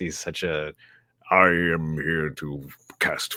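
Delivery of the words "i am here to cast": put-on movie villain voice. Describing a script featuring Dooku, doing a Dooku voice.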